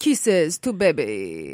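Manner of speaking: put-on loud, swooping, old-world French accent. Describing how a child just starting to speak sounds: imitating child's French-sounding accent. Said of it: "She sounds like an old-fashioned European Lothario".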